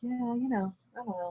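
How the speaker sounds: meek, soft voice. Showing how someone with a wood imbalance sounds: imitating a soft, timid voice. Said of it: "A soft, timid voice".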